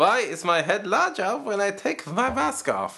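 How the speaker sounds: put-on German accent, very high and swooping. Asked by another speaker to say the line in a german accent: german accent. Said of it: "Can you say that in a German accent?".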